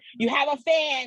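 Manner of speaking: put-on high hollering, as across a crowd. Retelling what a companion hollered as they left the arena, retelling a yell. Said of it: "but he's yelling".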